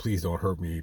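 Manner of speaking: mock tearful pleading. Speaker acts out the plea of an imagined captive: imitating someone crying, pleading. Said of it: "in pain and agony and crying".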